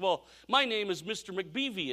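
light, put-on Irish accent. Retelling a TV episode, voicing the lineman Mister McBeevy: Irish accent. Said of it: "he's got kind of this Irish accent".

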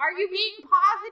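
high-pitched yelling voice. Retelling how mom checked on fighting over games: imitating mom yelling. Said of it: "she would yell, she goes".

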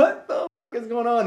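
high, loud, panicked outburst.

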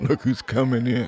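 laughing while speaking. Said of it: "and laughed".

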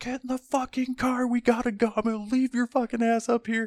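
mock screaming, very high-pitched and shrill. Retelling screaming at two guys to get in the car: imitating someone screaming. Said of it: "screaming at my".

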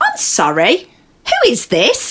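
polite, sing-song, professional office phone voice. Retelling answering a call from an angry stranger: polite office phone voice. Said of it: "You didn't put your office voice on".

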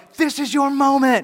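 loud, drawn-out, encouraging spin-class instructor yell. Retelling what a spin instructor yelled during fast sprints: imitating an instructor yelling. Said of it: "She would yell".

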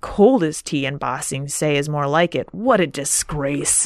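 sour, grumbling, complaining tone. Retelling a disappointed tea drinker's complaint: retelling a grumble. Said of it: "he grumbles".

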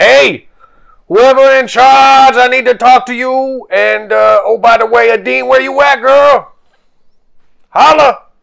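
booming, drawn-out, high hollering at the top of the lungs. Voicing a character on top of the ship calling for whoever is in charge: character yelling from the ship. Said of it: "he's just gonna get up there and be like".

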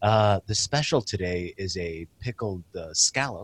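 soft, slow, meek, gentle voice. Acting out an imagined waiter role: soft unthreatening waiter voice. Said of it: "just talk softly and unthreatening".

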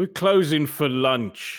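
put-on slow British accent.

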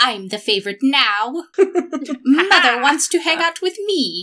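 high, loud, smug gloating. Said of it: "mannerisms are very".

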